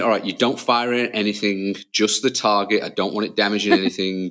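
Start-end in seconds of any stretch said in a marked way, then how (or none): none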